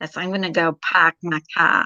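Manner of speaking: put-on Boston accent with no R's. Showing how people from Boston talk, Boston accent with dropped R's. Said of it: "they leave out the R's".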